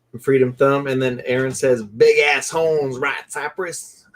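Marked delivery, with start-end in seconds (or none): 1.8-3.9 put-on Texan-style accent, best effort. Retelling what Aaron said to Cypress, in a Texan accent. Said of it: "in my best Texan accent".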